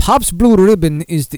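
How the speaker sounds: put-on failed Russian accent. Reading a quote from a beverage chairman aloud: bad Russian accent. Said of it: "I can't do a Russian accent".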